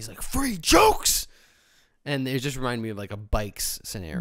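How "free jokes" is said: very high, loud, mad, angry voice. Retelling a preacher's reply to someone talking back: imitating an angry man. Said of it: "And then the guy just got mad".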